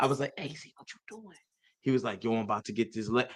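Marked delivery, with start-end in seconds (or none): 0.4-1.4 hushed, low-toned whisper. Retelling how he approached Z, speaking in a low tone. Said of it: "I talked to him in a low tone".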